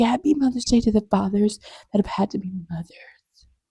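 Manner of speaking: hushed, breathy whisper with a mocking edge.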